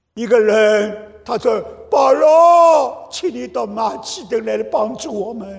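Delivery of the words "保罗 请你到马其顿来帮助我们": loud call projected across a distance. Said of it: "A man in Macedonia calling out".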